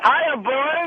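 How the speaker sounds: shouted out loud. Greeting the hosts on arrival, doing a Christopher Walken impression. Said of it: "I'm doing walking from at close range".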